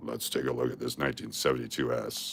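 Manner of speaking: very hushed, very quiet put-on deep voice. Showing coins and answering a request for deep voice, speaker switches to a deeper voice. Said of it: "I can do deeper voice".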